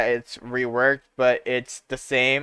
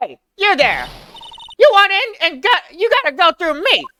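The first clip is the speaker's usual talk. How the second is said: put-on old lady voice, much higher, slower; 5 dB louder than usual. Voicing a character who blocks the main gate of Global Studios: old lady voice. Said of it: "I'm an old lady".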